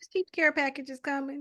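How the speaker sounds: high, quick, breezy, reassuring, dismissive voice. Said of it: "you hear in the voice like".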